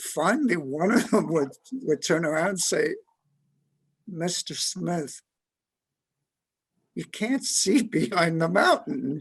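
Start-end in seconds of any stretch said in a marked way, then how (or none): 4.1-9.2 incredulous, almost unbelieving, protesting tone. The speaker retells one of a group answering a man's question, imitating disbelief. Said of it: "like almost unbelievable".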